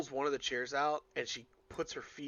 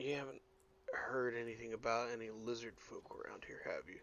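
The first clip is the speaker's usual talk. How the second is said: soft, hushed, confidential stage whisper under the breath; 2 semitones lower, 9 dB quieter than usual. Voicing a character who leans over the counter to ask the cook: half-whispering. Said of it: "She's gonna whisper to Cookie".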